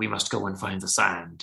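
put-on dramatic, grand delivery. Retelling a character's line about finding the sand: imitating a dramatic, grand delivery. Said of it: "he's doing his dramatic".

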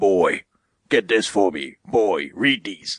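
slow, drawn-out, full-on gruff voice. Imitating Kratos giving orders to the boy: full-on gruff Kratos voice. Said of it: "gruff voice that only, like, Christopher Judge can muster".

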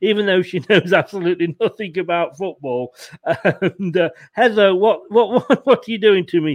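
laughing voice. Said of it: "I'm laughing 'cause my daughter's come in".

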